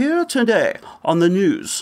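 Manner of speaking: put-on Southern London newsreader accent. Demonstrating the accent used on the news, BBC news Southern London accent. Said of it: "Southern London ex- uh, um, accent".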